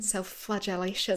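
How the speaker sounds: attempted Scottish accent. Urged to give it a go, a co-host repeats the word in a Scottish accent. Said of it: "sounds incredible in the Scottish accent".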